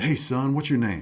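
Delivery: put-on loud Louisiana accent, laid on heavy. Retelling a man walking up to him at church security, imitating Zeke's heavy accent. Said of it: "real heavy accent".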